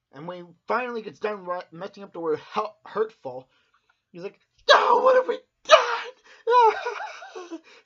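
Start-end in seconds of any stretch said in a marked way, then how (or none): 4.8-7.6 very high, very slow sobbing cry, loud, drawn-out wail. Retelling a character finishing a note, then crying: imitating someone starting to cry. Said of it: "Starts crying".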